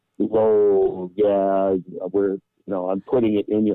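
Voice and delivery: ordinary talk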